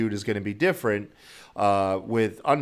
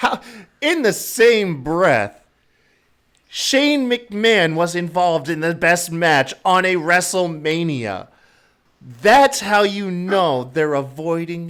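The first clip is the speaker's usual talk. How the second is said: loud, high voice, raised enough to peak mic; 7 semitones higher, 6 dB louder than usual. Making a point about a WrestleMania match on mic, raised voice. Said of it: "I'm raising my voice".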